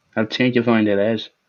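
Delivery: put-on Irish accent. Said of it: "I can go Irish if you want".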